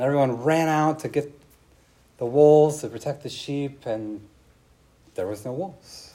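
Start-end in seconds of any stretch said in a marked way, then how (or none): none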